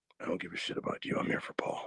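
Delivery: put-on severe, dead-serious breathy whisper. Retelling a wrestling promo between two wrestlers: imitating CM Punk's severe Batman voice. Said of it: "really severe Batman voice".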